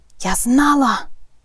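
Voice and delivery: gasped out. Narrator reads a character's exclamation while scanning the stands through binoculars, gasping. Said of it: "задихнулася Герміона".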